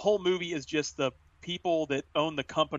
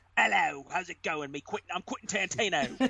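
casual, relaxed delivery; 3 semitones higher than usual. Retelling a scene where the director appears in his own film: imitating Quentin Tarantino. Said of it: "Tarantino's like".

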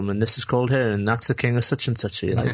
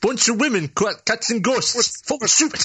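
put-on old granddad voice, much higher pitch; 12 semitones higher than usual. Discussing the Ghostbusters movie with a co-host, granddad voice. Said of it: "you brought your granddad voice over".

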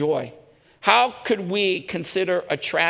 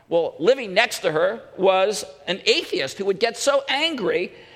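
ordinary delivery

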